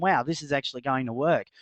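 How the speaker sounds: usual speaking voice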